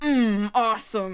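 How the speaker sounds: fake, impressive, big, confident show-off voice. Mocking the voice Gary puts on to impress: Gary's fake confident voice. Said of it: "that sort of fake voice that he puts on when he's trying to be like big and confident and impressive".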